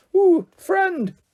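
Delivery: very high, squeaky little voice. Narrator voicing Mister Carter replying to Tina, in a squeaky high voice. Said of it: "said Mister Carter in a squeaky high voice".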